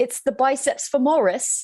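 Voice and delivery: put-on English accent. Saying a muscle name after being asked to: British accent. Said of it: "please tell me what that's like in your British accent".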